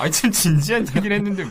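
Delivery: high, loud, protesting while laughing out loud.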